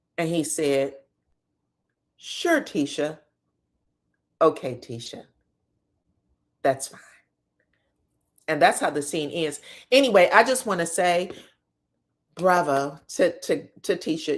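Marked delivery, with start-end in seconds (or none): 2.2-7.0 low, swooping, sing-song voice.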